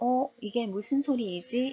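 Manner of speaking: ordinary talk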